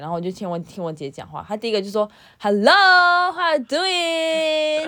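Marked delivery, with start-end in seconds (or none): 2.4-4.9 mock drunken speech, higher and louder. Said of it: "喝醉打给我".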